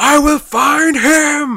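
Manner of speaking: high, loud, drawn-out, slow and shrill yell. Recalling a comic scene, imitating Michael Shannon yelling as Zod. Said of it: "I could just hear Michael Shannon in my head going".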